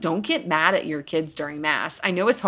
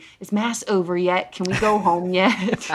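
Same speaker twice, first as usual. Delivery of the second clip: put-on loud whisper; 2 semitones higher than usual. Retelling what a four-year-old asks during mass: imitating a loud whisper. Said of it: "very loudly whispering".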